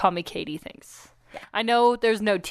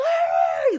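high screamed word, put-on. Retelling how a guy on a TV show yells for distraction: imitating Joe screaming.

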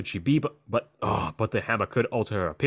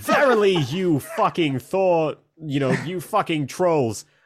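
put-on Boston accent, pitched up; 6 semitones higher, 4 dB louder than usual. Imagining a character's inner monologues, all done in a Boston accent. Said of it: "just in a Boston accent, as she's like".

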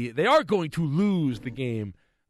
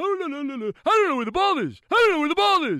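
mock frantic, very high-pitched, panicked fluster; 13 semitones higher, 4 dB louder than usual. Retelling how a catcher looked around for the ball: imitating a panicked catcher. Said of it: "That's what he sounded like".

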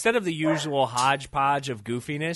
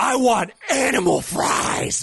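drawn-out, slow, loud yell full of drama and conviction; 7 semitones higher, 6 dB louder than usual. Imitating Angela Bassett ordering fast food: imitating Angela Bassett yelling dramatically. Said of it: "You don't have to yell".

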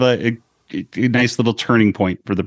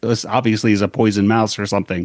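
usual speaking voice

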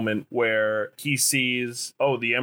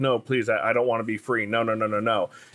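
mock begging, pleading tone. Describing a cut movie scene where a slave is set free, acting out a slave begging. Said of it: "the slave is begging".

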